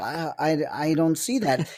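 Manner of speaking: slow, flustered, halting, panicked stammer. Retelling a stunned reaction on set while reading the pages: imitating own panicked reply. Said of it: "And I'm panicking".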